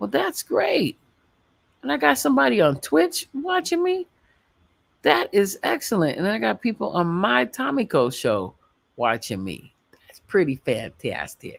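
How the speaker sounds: put-on suburban Chicago accent. Streamer thanking viewers on Twitch and his show: suburban Chicago accent. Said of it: "Do you like that Chicago accent?".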